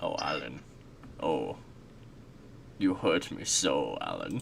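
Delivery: soft, eerie, unsettling, creepy put-on voice. On stream, speaking to Alan, creepy voice. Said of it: "with that voice. It's creepy".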